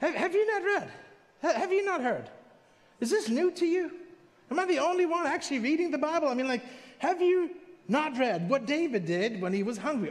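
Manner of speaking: incredulous, very sarcastic. Retelling how Jesus answered people who knew the law: imitating Jesus being sarcastic. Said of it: "Jesus is being very sarcastic".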